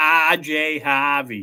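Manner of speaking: natural accent played up and shown off. Saying a player's name again after a viewer asks to hear the accent: showing off his accent. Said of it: "I just love that accent".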